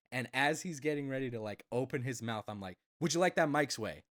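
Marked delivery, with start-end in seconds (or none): 3.0-3.9 blunt, firm, direct, no-nonsense, assertive tone. Retelling what was said to a customer: imitating own direct, assertive tone. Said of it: "in the most direct, assertive tone".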